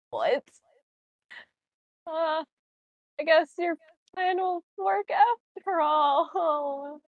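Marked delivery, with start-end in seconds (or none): 3.1-6.9 slow, drawn-out, reluctant delivery with no enthusiasm. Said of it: "You don't sound too enthusiastic about that".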